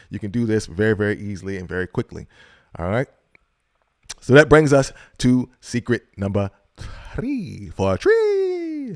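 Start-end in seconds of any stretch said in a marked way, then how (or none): 4.2-8.9 put-on radio announcer voice, swooping and pitched up. Presenter introduces the next secret to listeners, in an announcer voice. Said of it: "That's my voice, my announcer voice".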